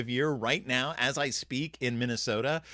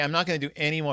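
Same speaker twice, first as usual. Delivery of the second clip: ordinary talk, nothing marked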